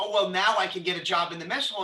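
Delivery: plain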